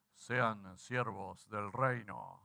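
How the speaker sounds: very low, deep FM radio announcer voice. Addressing listeners, the speaker says this in an fm radio voice. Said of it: "Se los digo así con voz de FM".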